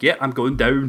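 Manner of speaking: put-on Scottish-accented, casual. Retelling a reply to a lady in the hospital elevator: Scottish accent. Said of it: "I was talking Scottish accent".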